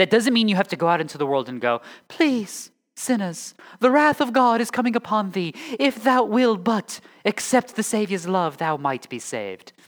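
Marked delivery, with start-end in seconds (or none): 2.1-9.7 slow, fake British street-preacher accent. Parodying preaching to sinners out in the world, in a put-on british accent. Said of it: "it helps if you practice that British accent".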